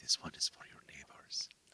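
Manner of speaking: hushed, close, soft, secretive whisper. Retelling what a restaurant owner's wife said, imitating a whisper. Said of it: "she'd whisper".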